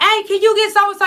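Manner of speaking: mock yelling. Acting out calling through the gate for someone: imitating someone yelling. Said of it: "you yelling like".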